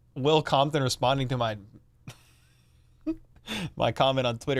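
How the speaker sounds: speaking through laughter. Explaining why they are laughing, laughing while talking. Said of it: "I'm still laughing about".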